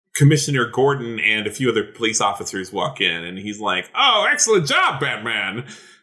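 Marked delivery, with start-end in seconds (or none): 3.9-5.6 high, swooping cartoon king voice. As a police commissioner walking in and addressing Batman, sounding like the King of Hearts. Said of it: "he sounds like the King of Hearts".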